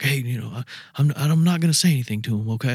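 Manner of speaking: anxious, nerve-struck voice. Retelling what a nervous fan asked before meeting the hosts, imitating a nervous fan. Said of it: "he was all nervous".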